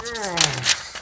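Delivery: moaned "oh", pitched high.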